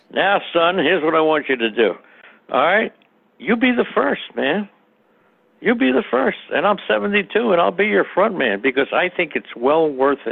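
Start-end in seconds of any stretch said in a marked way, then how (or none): 0.2-6.4 mock grandfatherly lecturing tone, higher pitched. Giving advice to a younger listener, put-on grandfatherly lecturing. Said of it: "I'm sounding like your grandfather now".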